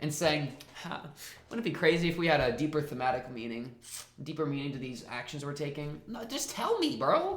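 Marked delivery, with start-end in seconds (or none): none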